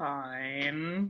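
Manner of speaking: low, drawn-out, wary, deeply distrustful fine. Voicing a character agreeing to climb onto a hand: very suspicious. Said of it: "with a great deal of suspicion".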